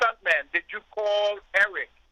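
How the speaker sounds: put-on Panamanian-accented speech. Speaker retelling what the General said to him, imitating a Panamanian accent. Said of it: "with his Panamanian accent".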